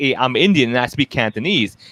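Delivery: ordinary talk, nothing marked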